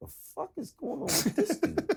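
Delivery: mock annoyed, irritated, full of attitude. Retelling turning his head to the side at someone: retelling own irritated attitude. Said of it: "now I'm getting an attitude".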